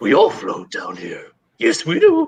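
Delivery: very slow, stretched words, swooping sing-song pitch. Doing a voice after another speaker asks to hear it: Pennywise voice. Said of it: "let's hear that".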